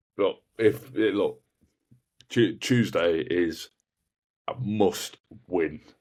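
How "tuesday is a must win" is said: very slow, clear, deliberate, each word spelled out. Answering a question about Tuesday's game for everyone watching, slow and clear. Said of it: "I say that slowly and clearly".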